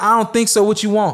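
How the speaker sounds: mock blunt, hard delivery. Retelling a rental clerk's curt answer: imitating a curt, hard reply.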